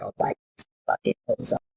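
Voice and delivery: menacing, threatening, breathy whisper. Showing what to say to him if he tries to pull away: put-on threatening whisper.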